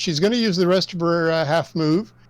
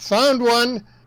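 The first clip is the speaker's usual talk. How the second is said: loud, high-pitched calling out; 6 semitones higher than usual. In a tabletop game, a player's character spots a foe, loud calling out. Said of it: "calls out in a loud voice".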